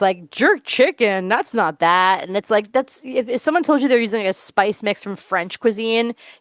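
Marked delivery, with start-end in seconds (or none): 0.3-2.3 put-on slow, haughty, sniffy, snobby voice. Mocking a judge who dismisses a contestant's dish: imitating a snobby tone. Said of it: "that total snobby thing".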